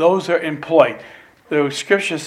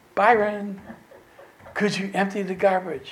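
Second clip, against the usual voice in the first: put-on sweet, small voice, higher and quieter; 5 semitones higher, 7 dB quieter than usual. A man retells a woman finally asking him a favor, sweet little voice. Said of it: "I hear that sweet little voice".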